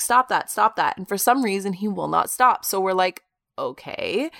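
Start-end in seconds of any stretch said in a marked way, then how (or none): 0.0-1.0 mock, loud, yelled calling out. Retelling telling Bentley to stop barking upstairs: retelling a yell up the stairs. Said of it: "I'm like yelling up the stairs".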